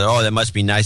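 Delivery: plain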